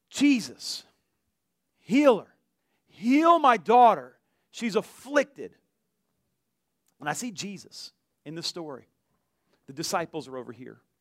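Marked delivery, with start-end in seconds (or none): 0.1-4.1 mock screaming, loud, drawn-out crying out. Retelling a Bible story, imitating a woman screaming out to the disciples. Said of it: "a woman over here screaming out".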